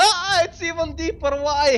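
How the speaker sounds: very high, drawn-out, pained wailing shriek. Voicing a man hit by a missile: acted louder scream of pain. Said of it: "he screams even more loudly".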